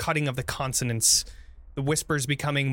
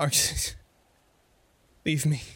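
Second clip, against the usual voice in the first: weak, failing stage whisper of a dying man; 2 semitones higher than usual. Voicing a wounded companion whispering into the hero's ear: whispering dying character. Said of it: "He whispers into your ear".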